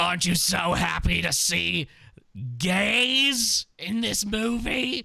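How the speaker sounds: cartoon smoker voice. Imitating a man talking about a movie, the speaker does a cartoon smoker voice. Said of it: "he almost sounds like a smoker, like a cartoon".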